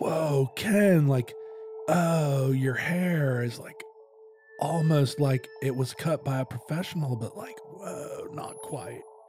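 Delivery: stoned, amazed, wonder-struck stoner voice. Showing how stoned people talk to Ken, put-on amazed stoned voice. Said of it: "you have to speak in a voice that conveys that amazement".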